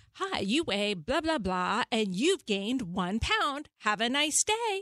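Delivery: awful, recorded, woman's talking-scale voice. Retelling what their talking scale used to say, in its awful voice. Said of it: "this awful voice, it would say".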